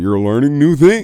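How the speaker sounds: very high, very loud, booming game show host. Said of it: "I said it like a fucking game show host".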